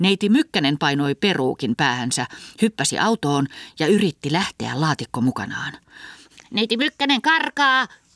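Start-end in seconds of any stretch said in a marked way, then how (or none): 6.5-7.9 very high, shrill, yelled-out shout. As a woman jumps into a car to get away, one of the group shouts: shouting. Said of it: "huusi Viltitossu".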